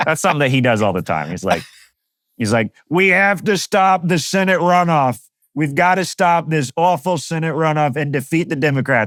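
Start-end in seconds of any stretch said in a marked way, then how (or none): 2.9-9.1 deliberate, drawn-out, high-pitched put-on voice. Imitating something he does all the time, Donald Trump voice. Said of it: "my Donald Trump voice".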